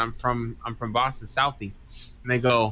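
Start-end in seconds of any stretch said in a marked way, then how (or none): none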